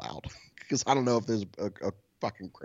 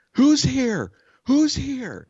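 very high, loud, insistent, drawn-out yelling; 8 dB louder than usual. Recounting a neighbor yelling at him, the speaker imitates her: imitating a woman yelling. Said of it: "She just keeps yelling".

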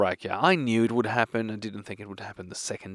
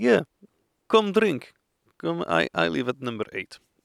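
loud, swooping put-on Russian accent; 4 semitones higher, 5 dB louder than usual. Quoting a man who invited the speaker over for a drink, russian accent. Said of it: "I don't know why I do a Russian accent".

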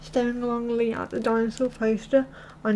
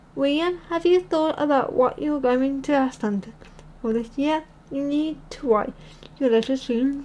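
ordinary delivery

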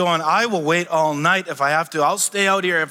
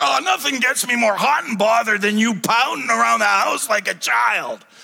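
put-on rough voice, pitched up; 5 semitones higher than usual. Acting out what a wife would never say to a pouting husband: put-on rough voice. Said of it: "in that kind of rough voice".

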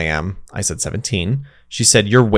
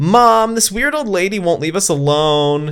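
mock very high-pitched scream; 10 semitones higher than usual. Retelling screaming to mom across the park about a lady bothering them: retelling a scream across a park. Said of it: "screamed to my mom across the park".

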